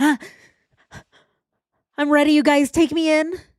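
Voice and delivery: put-on nervous, high voice. Retelling his reaction when the police officer moves: imitating Chris sounding nervous. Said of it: "and Chris is like".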